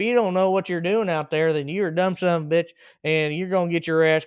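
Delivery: put-on country accent. Quoting the one-liners Marty Smith said on camera, Marty Smith country accent. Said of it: "his nice country accent".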